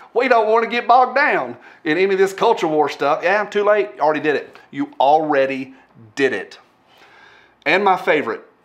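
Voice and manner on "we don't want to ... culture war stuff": put-on Southern-accented American delivery. Quote Evan and, unable to help it, give him an Evan voice, put-on Southern accent. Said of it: "I'm giving Evan a Southern accent".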